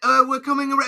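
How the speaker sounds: put-on British accent. Asking whether the role needed a medieval accent: put-on british accent. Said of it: "the British accent".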